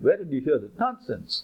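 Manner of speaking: ordinary talk, nothing marked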